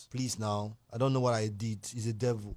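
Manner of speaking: hushed, soft, very deep, low murmur. Speaker showing how someone caught in a crime talks, talking soft. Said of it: "We're talking soft".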